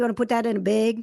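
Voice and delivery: put-on Wisconsin accent. Show how you talk after hanging around your family from Wisconsin too much, imitating a Wisconsin family accent. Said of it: "hang around my family too much from Wisconsin".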